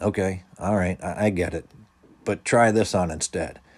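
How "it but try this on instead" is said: ordinary delivery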